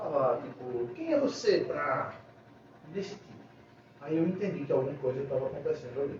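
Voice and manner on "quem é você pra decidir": mock derisive talking-down tone, swooping, sarcastic. Recounting a dinner in the kitchen, the speaker quotes what she said: imitating a mocking tone. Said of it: "um tom de deboche por cima de mim".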